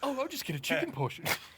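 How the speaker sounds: teasing, mocking, squeaky, very high echoing voice. Retelling what the other speaker said out loud, mocking a customer. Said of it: "mocking her".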